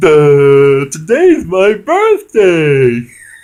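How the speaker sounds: mock very high, very loud drunken squealing cackle. Retelling a kid walking into the bar late at night, imitating a drunk kid's cackle. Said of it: "I don't know if I can do the voice because he goes".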